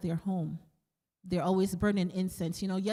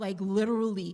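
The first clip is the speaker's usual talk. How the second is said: ordinary talk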